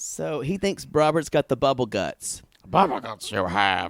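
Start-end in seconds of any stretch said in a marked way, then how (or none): 2.7-3.9 low, croaking, puppet-like creature voice. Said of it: "He talks like this".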